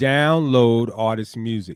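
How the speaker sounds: slowed down, deliberate, each word spelled out. Repeating a point to the audience a second time: saying it slower. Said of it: "I'm going to say it a little bit slower".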